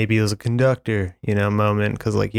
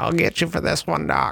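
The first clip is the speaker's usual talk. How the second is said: put-on parrot voice, much higher; 6 semitones higher than usual. Asked by the others, the speaker performs the quoted line in their best parrot voice. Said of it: "can you do your best, parrot voice".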